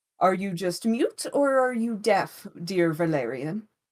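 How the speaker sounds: egotistical mage character voice. The narrator voices a mage speaking to valerian; egotistical mage character voice. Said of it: "man is an egotistical, amazing mage. / man is an egotistical, amazing mage. You don't understand. I love this NPC. [name]. That's where some of his inspiration came from, was [name]. Yeah, I was like".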